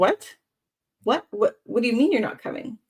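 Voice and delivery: acted upset disbelief. Retelling her reaction when he said he wasn't coming, acting out upset disbelief. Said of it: "I was like really upset".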